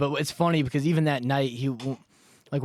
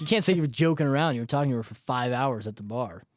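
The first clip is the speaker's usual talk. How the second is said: usual speaking voice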